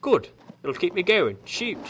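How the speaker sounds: put-on British accent.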